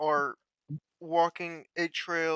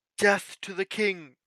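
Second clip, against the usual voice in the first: mild, held-back war cry; 3 semitones higher than usual. Voicing an elf who draws his sword toward the sky: yelling. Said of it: "and yells".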